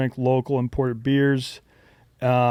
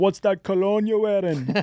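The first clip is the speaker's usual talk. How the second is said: put-on Jamaican accent spoken at a raised pitch; 7 semitones higher than usual. Retelling walking into a ski lodge full of Jamaicans, quoting their question: Jamaican accent. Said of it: "That's a good Jamaican accent".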